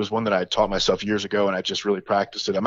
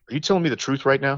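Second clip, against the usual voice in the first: put-on utterly earnest, dead-serious, high-pitched kid voice; 6 semitones higher than usual. Retelling a young nephew's question after a magic trick: imitating a dead serious kid. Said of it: "with the most dead serious look on his face".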